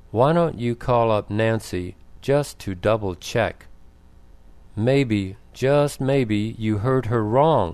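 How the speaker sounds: plain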